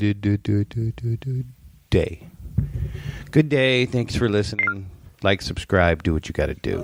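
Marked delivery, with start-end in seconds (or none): 0.0-3.9 very slow, drawn-out delivery. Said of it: "I'm gonna do it really slow".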